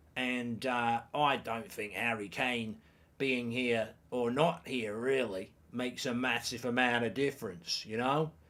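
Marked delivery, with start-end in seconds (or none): 1.2-7.9 put-on Australian accent sounding West Country, lower and quieter. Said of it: "I'm sounding like I'm from Somerset, but I meant to be from Australia".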